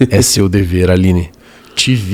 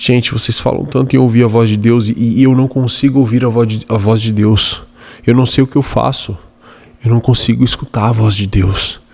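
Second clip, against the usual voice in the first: put-on tearful sobbing. Retelling a mentee's words at a mentorship meeting, imitating someone sobbing. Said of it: "chorando em prantos".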